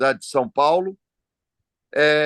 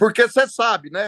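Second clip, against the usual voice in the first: mocking tone, higher pitch. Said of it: "com deboche".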